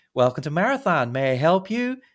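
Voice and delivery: put-on cheery, bright, high, loud delivery. Retelling how a car rental agent greets a customer: imitating a cheerful greeting. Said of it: "looks at him cheerfully and says".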